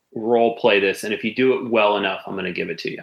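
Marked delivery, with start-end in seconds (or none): none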